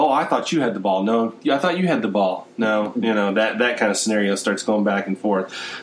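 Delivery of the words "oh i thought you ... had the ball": normal talking voice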